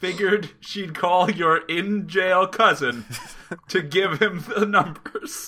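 laughing through words.

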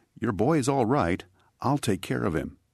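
calmly spoken. The painter speaks to the nervous mother, very calm. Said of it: "very calmly spoke to the mother".

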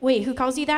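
ordinary talk

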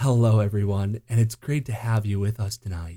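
welcoming, smooth late-night radio host voice. Mimicking the other speaker's show intro, like radio host Delilah: Delilah radio host voice. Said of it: "You come back on and you're like".

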